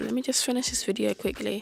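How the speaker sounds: usual speaking voice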